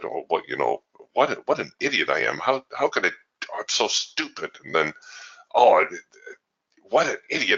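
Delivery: mock self-berating mutter under breath. Retelling how a man watching the market cursed himself, imitating his self-cursing. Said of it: "starts cursing and berating himself under his breath".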